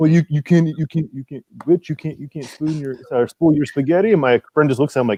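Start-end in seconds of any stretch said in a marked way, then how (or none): 0.0-4.1 put-on heavy, thick old-country Italian accent laid on. Quoting the grandfather speaking to a friend, thick Italian accent. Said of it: "he had that that Italian".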